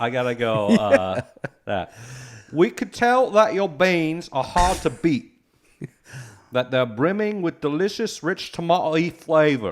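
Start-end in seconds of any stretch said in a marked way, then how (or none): 2.5-9.7 high-pitched, put-on English accent. Reading out an ad script: English accent. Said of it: "got to do it in an English accent".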